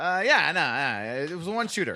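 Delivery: lazy, dismissive tone. Mocking how someone explained the shooting: imitating a lazy dismissal. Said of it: "someone lazily going".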